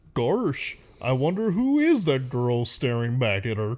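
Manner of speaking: silly cartoon dog voice with swinging pitch. Retelling a scene from a movie, the speaker does a Goofy impression. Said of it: "Flawless Goofy impression".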